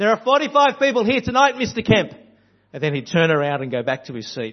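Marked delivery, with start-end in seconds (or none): 0.0-2.1 loud, very high calling-out voice. A preacher retells a congregation member calling out from the front: John's loud call-out. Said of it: "call out in a loud voice".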